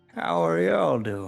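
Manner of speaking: put-on acted old hermit voice. Voicing an old-looking hermit riding up on a unicorn: old hermit voice. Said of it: "an old-looking hermit comes in riding a unicorn".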